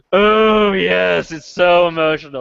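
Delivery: very slow, put-on jaded, blasé hipster drawl. Mocking a film-review reaction, not to sound all blasé: mock blasé hipster tone. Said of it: "not to sound all blasé and, and hipsterish".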